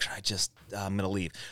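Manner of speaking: soft, embarrassed whisper under the breath. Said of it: "So I'm just like".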